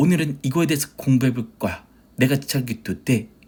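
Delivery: put-on lecturing teacher voice. Speaker tries imitating a teacher starting a lesson, 현우진 teacher voice. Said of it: "현우진 선생님 조금 따라 할 수 있을 것 같아. 어떻게 하냐면, 좀 이러지 않나?".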